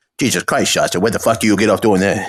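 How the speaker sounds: tough-guy New Jersey gangster-style voice. Speaker tries out an impression they've been working on: Tony Soprano impression. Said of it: "I've been working on a Tony Soprano".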